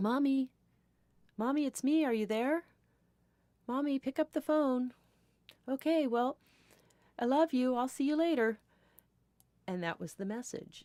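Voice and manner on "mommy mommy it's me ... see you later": put-on high, small child's little girl voice. Retelling an answering machine message left by a little girl, in a little girl voice. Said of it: "it was a little girl voice that said".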